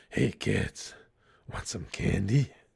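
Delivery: hushed, breathy whisper of a masked vigilante. Asked by someone in chat to do it, answering in Batman voice. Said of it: "the Batman voice?".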